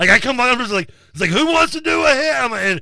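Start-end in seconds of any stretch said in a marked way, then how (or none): 1.3-2.3 high, yelled call-out. Retelling coming out of a room at a party: imitating own past yelling.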